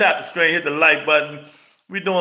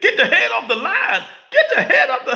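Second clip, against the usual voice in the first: put-on yelling voice, higher pitch; 10 semitones higher than usual. Retelling how Teddy Atlas yelled while talking about the fight: imitating Teddy Atlas hollering. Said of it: "Teddy Atlas was hollering and screaming".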